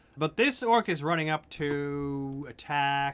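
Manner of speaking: plain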